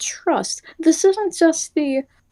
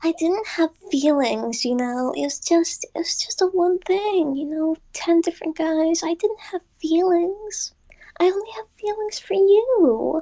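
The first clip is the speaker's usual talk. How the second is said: put-on Valley Girl voice with drawn-out "you"; 3 semitones higher, 3 dB quieter than usual. Summoning a character voice for the listeners, Valley Girl voice. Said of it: "I need to summon the Valley Girl voice".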